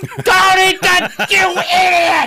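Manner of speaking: very high, drawn-out yelling. Describing his wife watching reality tv, imitating her yelling at the show. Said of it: "she's like yelling".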